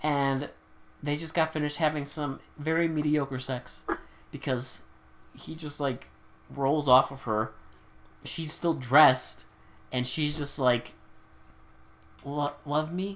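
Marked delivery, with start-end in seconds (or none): 12.2-13.2 "love me" spoken with rising, climbing pitch. Retelling a woman's line in a scene, question rise on love me. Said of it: "But like a question".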